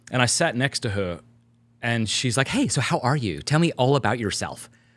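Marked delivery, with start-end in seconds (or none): 2.4-4.7 badly put-on, gushing, over-cheerful woman's voice. Retelling what a woman said on a long flight, in a bad mock-happy woman impression.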